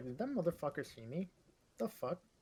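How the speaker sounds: hushed half-whisper under the breath. A game master voices one of the ogres, half-whispering to himself. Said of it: "like whispers to himself".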